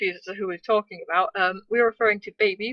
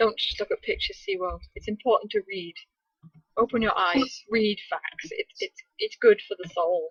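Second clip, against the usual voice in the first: plain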